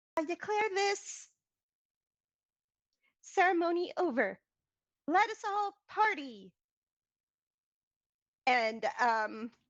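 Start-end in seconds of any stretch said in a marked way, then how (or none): 0.2-6.6 tiny, cutesy, high-pitched voice. Narrating a ceremony, voice Queen Flora addressing the cheering crowd in the tiniest cute voice. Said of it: "cutesiest, tiniest little voice".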